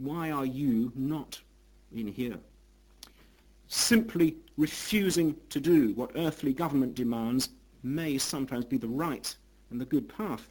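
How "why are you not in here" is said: acted, mock-stern, quieter and slower. Retelling how a jailed philosopher answered a visiting friend, the speaker is retelling a stern reply. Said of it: "replied sternly".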